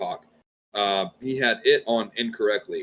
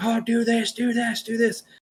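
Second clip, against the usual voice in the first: acted, shrill, very high, drawn-out scream; 14 semitones higher than usual. Retelling a water rescue where everyone shouted advice: imitating people screaming. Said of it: "everybody's screaming".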